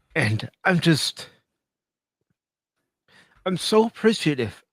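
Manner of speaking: tearful voice, crying while talking. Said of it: "Are you crying?".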